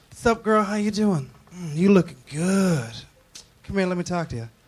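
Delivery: flirty, come-on tone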